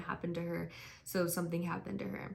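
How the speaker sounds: usual speaking voice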